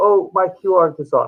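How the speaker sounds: normal talking voice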